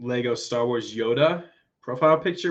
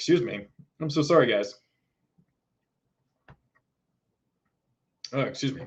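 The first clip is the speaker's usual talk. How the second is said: hiccuping while talking. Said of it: "And I have the hiccups".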